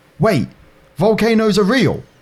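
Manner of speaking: very high, acted-out shocked shout. Retelling a kid's outburst during a class volcano discussion: imitating a surprised yell. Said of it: "yelled in the most surprised voice ever".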